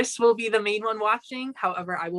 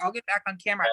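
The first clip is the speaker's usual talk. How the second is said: put-on mouth-full speech, quieter; 4 dB quieter than usual. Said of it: "she would have the spoon in her mouth like this".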